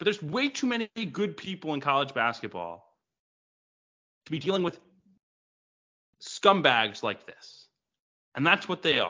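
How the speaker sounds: pissed-off rant. Podcast host, apologizing for yelling near the episode's end, in angry yelling. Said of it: "I'm sorry I'm pissed".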